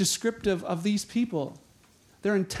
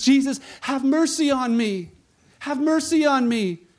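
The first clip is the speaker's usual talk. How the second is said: desperate, pleading, raised shout; 5 semitones higher, 6 dB louder than usual. Telling of blind Bartimaeus calling to Jesus, retelling a desperate shout. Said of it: "he shouts to Jesus".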